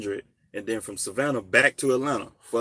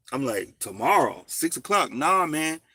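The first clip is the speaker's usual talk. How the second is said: normal talking voice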